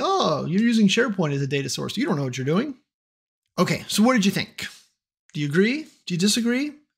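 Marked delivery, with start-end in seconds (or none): none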